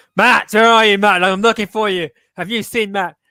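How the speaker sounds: very loud, high, menacing, threatening yell. Retelling a wrestler going around backstage looking for someone: imitating Moose shouting. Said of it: "shouting his name".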